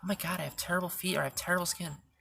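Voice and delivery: normal talking voice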